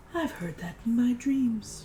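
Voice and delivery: softest, faint, barely-there half-whisper. Voicing a call in the softest of half-whispers: softest half-whisper. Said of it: "It is the softest of whispers".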